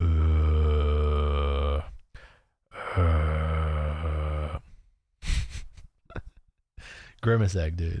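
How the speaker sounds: low, very slow, dragging zombie drawl. Showing off an impression, zombie impression voice. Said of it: "a zombie uh impersonation I can do".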